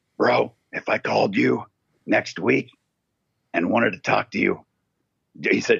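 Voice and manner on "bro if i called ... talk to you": put-on rough, gruff voice. Quoting what a man said to him about calling next week, imitating his gruff voice. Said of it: "but I get the gruffness".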